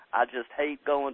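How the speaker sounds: slow, drawn-out Mississippi drawl. Interviewer quoting the guest's own words back, imitating a Mississippi accent. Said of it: "you say with that beautiful Mississippi accent".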